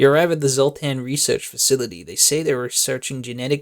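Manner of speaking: ordinary delivery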